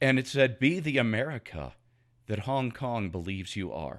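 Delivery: deeply moved, emotional, choked-up voice. Describing a photograph of hong kong protesters and what it said, choked up. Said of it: "I'm getting a little choked up over this".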